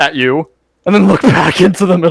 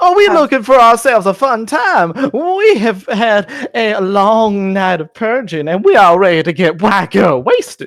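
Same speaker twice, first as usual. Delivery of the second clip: high, buzzing mosquito character voice; 5 semitones higher than usual. Voicing a mosquito cloud that a player speaks to: mosquito voice. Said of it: "I have a mosquito voice".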